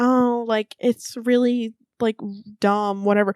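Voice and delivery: ordinary talk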